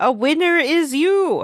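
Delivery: put-on announcer call, high, drawn-out, stretched long. Retelling a game scene, a voice from off screen: imitating an offscreen shout. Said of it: "you hear a voice from off screen shout".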